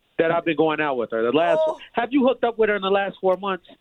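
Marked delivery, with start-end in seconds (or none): 1.9-3.6 very loud, shrill voice, far too loud. Confronting the other speaker, who says to lower their voice: loud, at a ten. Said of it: "Lower your voice. You're at a ten".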